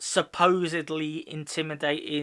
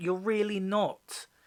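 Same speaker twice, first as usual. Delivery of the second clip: ordinary delivery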